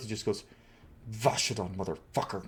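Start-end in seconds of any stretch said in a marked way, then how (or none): 1.1-2.4 barely audible, low mutter under the breath. Retelling a scene where Thorn speaks Kunlot for the first time, muttering under his breath. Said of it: "speak in Kunlot for the first time in a long time under his".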